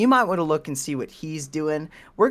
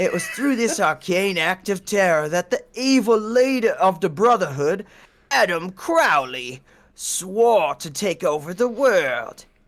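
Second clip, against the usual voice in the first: put-on, attempted Cockney accent; 3 semitones higher than usual. Reading a narration aloud on request, in an attempted Cockney accent. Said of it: "You need some sort of Cockney accent".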